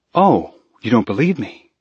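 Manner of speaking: flat, dry delivery. A performer pauses before the audience and looks around, deadpan. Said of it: "then deadpanned".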